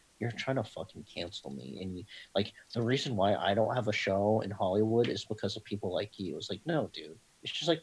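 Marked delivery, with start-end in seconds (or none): none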